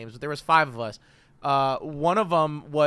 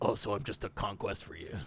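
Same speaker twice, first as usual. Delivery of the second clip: low, soft offended voice. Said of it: "she gets really offended".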